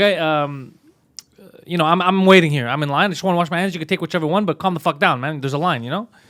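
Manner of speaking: plain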